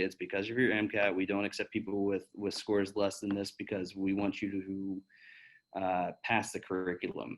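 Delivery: ordinary delivery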